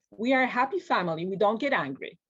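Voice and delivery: put-on stern, rebuking tone. Retelling what a client's mother said when she got angry: imitating a stern mother. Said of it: "her mother very sternly said".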